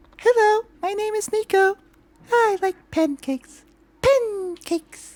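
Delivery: very high, small cat creature voice. Speaker demonstrates the voice they did for the main character; Nico's little cat voice. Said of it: "My favorite voice of doing it was definitely Nico's voice".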